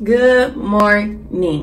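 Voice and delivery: crusty, groggy just-woke-up voice. Greeting viewers right after waking up, in a crusty just-woke-up voice. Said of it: "I sound crusty because I just woke up".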